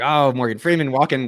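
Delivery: ordinary delivery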